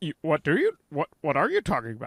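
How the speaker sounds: put-on incredulous podcast host voice. Describing what Joe does on the podcast, imitating Joe. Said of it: "every time Joe does that".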